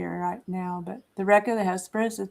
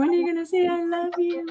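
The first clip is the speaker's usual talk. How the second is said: put-on very high, little, babyish voice; 10 semitones higher, 4 dB louder than usual. Speaking for the baby who waits for a kiss: voicing the baby. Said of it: "She's going".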